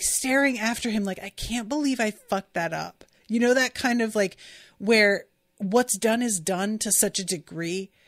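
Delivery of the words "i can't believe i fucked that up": ordinary talk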